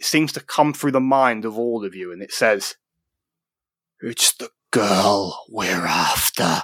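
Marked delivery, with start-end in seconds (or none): 4.0-6.6 dark, echoing, low voice, very drawn-out and slow. Game narrator voices a voice heard in all the players' minds, dark and echoey. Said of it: "A dark, echoey voice".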